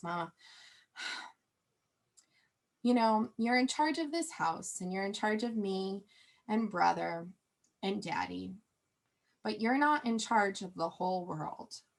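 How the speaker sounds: put-on heartfelt kid voice with total, dead serious sincerity. Retelling what a young son said at the counter: imitating a child speaking sincerely. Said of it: "he looks at me very sincerely".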